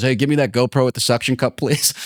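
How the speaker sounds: loud called-out yell. Speaker recounting a funny camera video, retelling a yell. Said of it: "Dylan is yelling. He goes".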